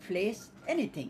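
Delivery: ordinary delivery, nothing marked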